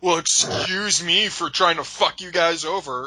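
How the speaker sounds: acted-out snotty, sarcastic, smug, snide voice. Quoting someone's reply to a company's request: imitating a smug douchebag tone. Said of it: "it's such a douchebag way where it's like".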